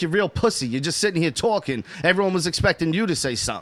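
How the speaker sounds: ordinary talk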